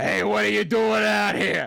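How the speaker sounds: loud, yelled, put-on Brooklyn accent. Retelling how a man yelled at a kid who wandered into a restricted area, in a fake Brooklyn accent. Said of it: "yelled out in a fake Brooklyn accent".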